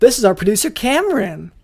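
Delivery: loud, swooping, put-on, overeager excitement. Introducing our producer after deciding to sound more excited: forced excitement. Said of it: "maybe I should sound more excited".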